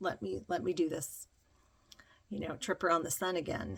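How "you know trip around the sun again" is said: normal talking voice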